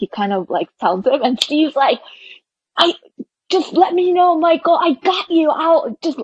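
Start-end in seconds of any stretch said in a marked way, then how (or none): 2.8-6.2 yelling, raised pitch. Retelling a moment from a basketball game: imitating Steve Kerr yelling. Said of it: "he, like, yells it".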